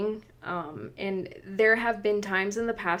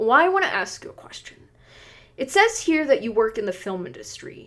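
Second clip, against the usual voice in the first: stern, serious, no-nonsense tone; 3 semitones higher, 5 dB louder than usual. Retelling what a caller asked on speakerphone: imitating a serious, stern man. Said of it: "he was very serious and stern".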